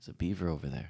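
put-on nonchalant tone. Retelling another speaker pointing out a beaver in the dark: imitating a nonchalant tone. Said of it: "so nonchalant".

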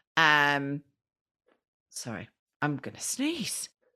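ordinary talk, nothing marked

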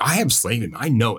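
ordinary talk, nothing marked

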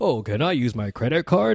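put-on, mock American accent. Recalling how a TV show mocks Americans, in a mock American accent. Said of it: "That's what we sound like".

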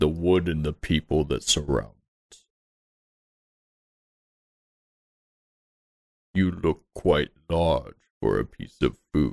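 deep, low monster creature voice. Voicing a creature heard far below the listeners, deep creature voice. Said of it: "Just a deepness".

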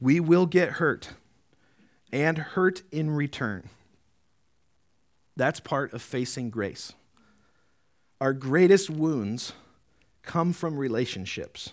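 kind of slow, unhurried reading.

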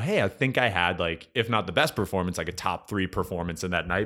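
ordinary talk, nothing marked

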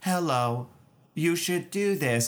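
flat, level, unvarying monotone voice. Describing a bit where one character keeps a monotone voice: monotone voice. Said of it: "Keep one monotone".

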